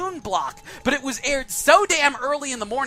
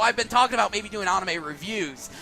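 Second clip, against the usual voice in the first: plain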